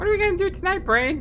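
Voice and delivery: very high, squeaky put-on character voice.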